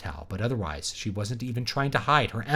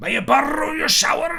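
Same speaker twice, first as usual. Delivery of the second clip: put-on furious, high-pitched Scottish accent; 4 dB louder than usual. Reading a scene aloud, voicing a Scotsman: angry Scottish accent. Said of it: "I can't do a Scotsman in anything but but like angry".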